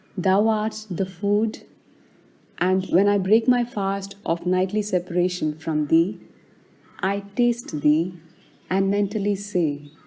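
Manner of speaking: plain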